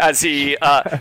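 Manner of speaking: ordinary talk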